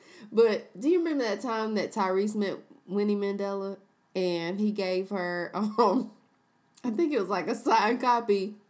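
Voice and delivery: talking while giggling and laughing. Recalling a funny memory about [name] and [name], laughing while talking. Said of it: "I'm sorry for laughing".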